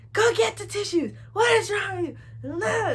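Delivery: put-on furious, angry scolding, very high pitched. Retelling mom's reaction to a bloody hug, imitating mom angrily scolding. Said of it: "she was so mad".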